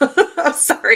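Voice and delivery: high, loud voice, laughing throughout.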